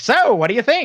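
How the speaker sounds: put-on very high, vintage old-time radio announcer voice. Describing a man first heard over a tv ad: old-time radio voice. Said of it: "sounds exactly like his old time radio voice".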